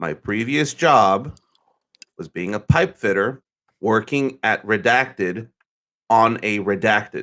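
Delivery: very slow, deliberate, spelled-out delivery. Explaining a previous job so everyone understands, speaking very slowly. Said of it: "I'm gonna say this real slow".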